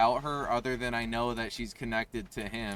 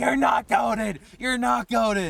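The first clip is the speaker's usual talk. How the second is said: very high, loud, annoyed, insistent mock child voice; 11 semitones higher, 6 dB louder than usual. Retelling how the speaker's little brother reacted during a race, imitating a pissed-off little brother. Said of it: "my little brother was getting like so fucking pissed off".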